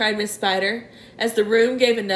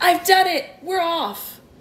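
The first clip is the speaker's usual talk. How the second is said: high, full-throated, excited shout; 7 semitones higher than usual. The centipede pokes his face through a hole in the ceiling, shouting.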